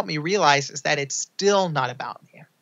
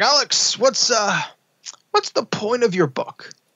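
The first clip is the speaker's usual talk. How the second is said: put-on gruff, blunt New York accent, very slow, drawn out; 6 semitones higher than usual. An author recalls a man calling him into his corner office, gruff New York guy voice. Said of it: "gruff New York guy".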